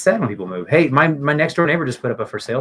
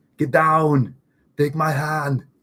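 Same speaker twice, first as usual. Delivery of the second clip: put-on slow, deliberate, drawn-out action-hero Austrian accent; 4 semitones higher than usual. Talking about kids doing impressions, saying lines in an Arnold Schwarzenegger Austrian accent. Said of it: "He's Austrian. ... That's how he talks".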